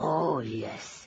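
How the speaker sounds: growled, growling tone. Reading a story, a character agreeing about revenge tonight: growled.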